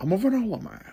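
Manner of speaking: breathy, whispered, put-on film villain voice. Showing an impression from a favorite movie: There Will Be Blood impression. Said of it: "I think that's a pretty good impression".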